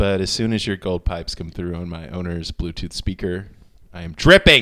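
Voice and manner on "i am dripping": full-volume yell, as if in capitals. Reading a written message aloud, part in all caps: shouted, all caps. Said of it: "And that's all caps. That's why I read it that way".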